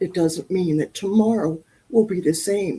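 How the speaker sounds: tearful, choked-up, close to crying. Telling of a personal wake-up call, getting choked up. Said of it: "I'm gonna start crying".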